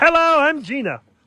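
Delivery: high-pitched puppet character voice. Teasing someone for doing one voice over and over: imitating a puppet voice. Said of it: "You do one voice over and over".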